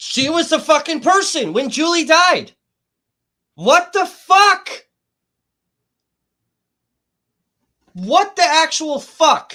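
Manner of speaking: very loud, high, furious screaming with rage. Pausing a video to react to what was just said, screaming in anger. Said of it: "fucking screaming my brains out".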